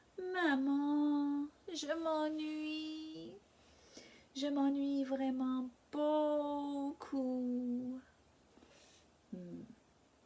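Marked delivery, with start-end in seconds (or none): 0.4-8.0 deliberately irritating, annoying voice, pitched up. The narrator pesters Mom while she works, in the most annoying voice. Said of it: "je lui parle avec ma voix la plus ennuyante".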